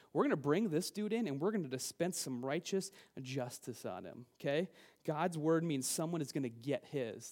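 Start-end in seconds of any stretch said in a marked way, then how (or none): none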